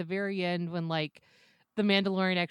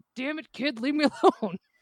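loud, high-pitched, exasperated fed-up dad voice; 7 semitones higher, 5 dB louder than usual. Retelling a scene where the Mandalorian scolds Baby Yoda: imitating the Mandalorian as annoyed dad. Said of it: "he's all of a sudden Dad T M".

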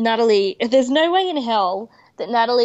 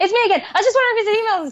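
really fast, rapid-fire, horse-race commentator speed; 11 semitones higher than usual. Retelling a caller who keeps phoning back: imitating someone talking really fast. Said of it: "says it really, really fast".

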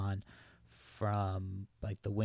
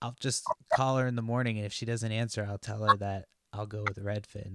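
ordinary delivery

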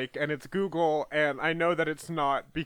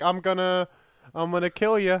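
put-on menacing baby voice, higher; 3 semitones higher than usual. Imitating a killer baby emoji: Alec Baldwin as Boss Baby voice. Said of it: "Alec Baldwin's gonna talk and be like".

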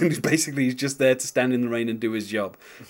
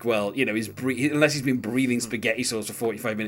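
ordinary delivery

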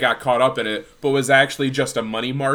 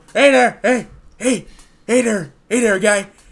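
put-on politician voice, spoken with teeth kept apart; 8 semitones higher, 5 dB louder than usual. Trying out an impression among other speakers who comment on it, in an open-mouthed Joe Biden accent. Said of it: "The way you do a Joe Biden accent".

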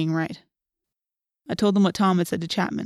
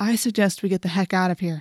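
usual speaking voice

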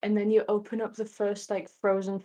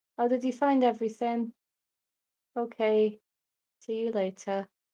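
put-on glum, sad shop-assistant voice. Acting out a neutral dragon as a shop assistant: sad shop assistant voice. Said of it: "neutral dragons are just sad".

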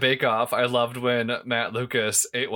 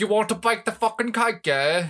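exaggerated, bad Cockney accent, very high-pitched; 10 semitones higher than usual. Showing the British accent once judged by a Londoner: bad exaggerated Cockney accent. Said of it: "garbage, stereotypical British orphan voice".

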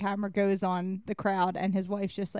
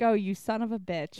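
ordinary talk, nothing marked

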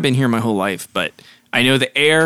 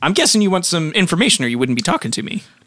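put-on high talking rat character voice; 5 semitones higher than usual. The speaker voices a rat being asked for information; talking rat voice. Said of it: "The rat says".

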